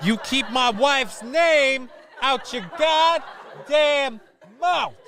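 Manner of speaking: very high pitch, slow, every word dragged out. Joking about a rumor, doing a Will Smith impersonation. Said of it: "that's my Will Smith impersonation".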